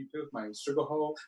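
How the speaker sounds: quiet mutter. Retelling what William said under his breath, imitating William muttering under breath. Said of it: "out of like the bottom of his breath".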